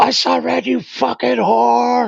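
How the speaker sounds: play-acted, rough, high, all-out scream from the lungs. Retelling how you frightened everybody at the bar, imitating Sam Kinison screaming. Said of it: "I'm screaming this at the top of my lungs".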